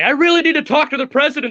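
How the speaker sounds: high, fast, mock pleading voice.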